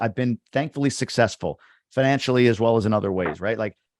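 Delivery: ordinary delivery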